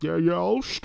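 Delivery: put-on evil bad-guy voice, movie villain style. Retelling a movie scene where a character volunteers to stay: Bane voice. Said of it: "I did the Bane voice for him".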